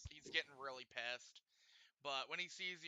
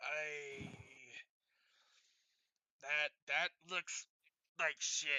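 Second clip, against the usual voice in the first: flat-out blunt dwarf voice, spoken very slowly; 6 dB louder than usual. Voicing a dwarf dock worker judging armor: dwarf speaking very bluntly. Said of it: "He just kinda says very bluntly".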